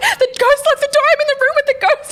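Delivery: very high, panicked screaming.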